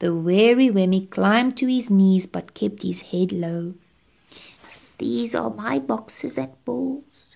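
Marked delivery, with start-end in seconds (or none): 5.0-7.4 subdued, hushed, quiet, soft-spoken voice. Reading the wary Wemmick speaking to Eli, said quietly. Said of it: "he said quietly".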